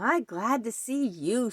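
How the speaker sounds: cackling voice of a small creature. A narrator reads a small furry creature greeting a newcomer, cackling. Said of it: "she cackled".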